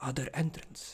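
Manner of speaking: soft, unvoiced whisper under the breath. Voicing a character inviting a newcomer into a shop, whispering. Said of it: "She like whispers".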